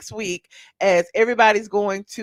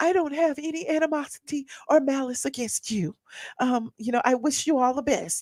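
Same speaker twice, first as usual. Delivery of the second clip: mock theatrical, overly earnest, high, dramatic, gracious tone; 5 semitones higher, 6 dB quieter than usual. Retelling a reality show scene, imitating a woman's dramatic voice. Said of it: "with her dramatic voice".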